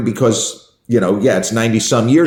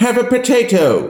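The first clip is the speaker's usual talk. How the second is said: haughty, lordly, imperious voice, slow and swooping; 12 semitones higher than usual. Act out how he offers a potato rather than simply asking, as an imperious Thesiger impression. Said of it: "He very imperiously goes".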